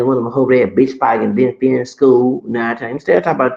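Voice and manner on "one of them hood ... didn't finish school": ordinary talk, nothing marked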